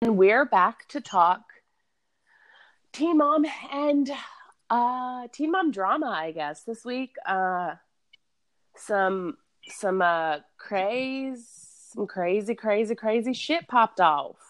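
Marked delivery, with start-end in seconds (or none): 11.9-14.2 really country North Carolina accent coming through. Introducing this week's Teen Mom drama, sounding really country. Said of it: "That sounded really country".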